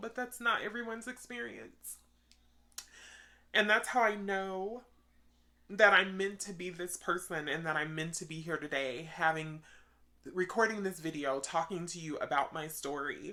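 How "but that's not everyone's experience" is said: soft, pitched-up voice with rising emotion. Speaker recording a video about their own story: getting emotional. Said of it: "I'm sorry that I'm getting emotional".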